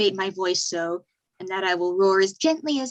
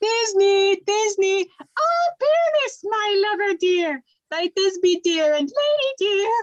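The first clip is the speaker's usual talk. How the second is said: very high, tiny, squeezed-up falsetto voice; 12 semitones higher, 3 dB louder than usual. Asking to play Thisbe too, speaking as Thisbe in a monstrous little voice. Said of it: "I'll speak in a monstrous little voice".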